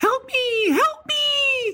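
very high, every word drawn out. Recalling a line from the original The Fly film; The Fly 'help me' voice. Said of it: "she would always like do that voice".

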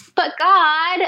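high-pitched whining voice.

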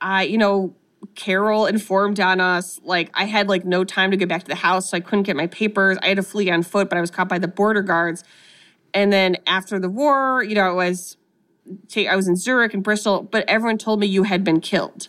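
plain

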